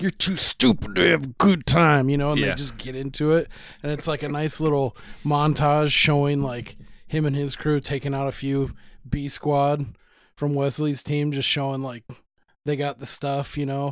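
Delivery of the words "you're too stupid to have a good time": pushed through clenched teeth, loud and rough. Recounting a movie scene, quoting a character's line, retelling it through gritted teeth. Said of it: "gritted teeth".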